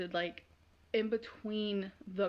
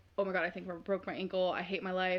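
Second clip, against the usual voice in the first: plain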